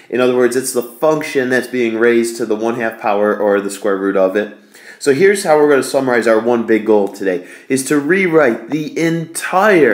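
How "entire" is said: leaning hard on entire, strong stress. Explaining an integral problem, the speaker states today's goal: stress on 'entire'. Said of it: "emphasis on entire".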